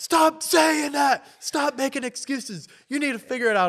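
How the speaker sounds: mock very high, shouted scolding. Retelling how instructors in a boardroom yelled at them: imitating instructors yelling. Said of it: "they're all yelling at me".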